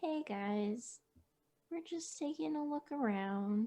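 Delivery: calm, soothing, reassuring voice. Holding hands out, speaking to a group of timid creatures: low, calm voice. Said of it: "talking in a low, calm voice".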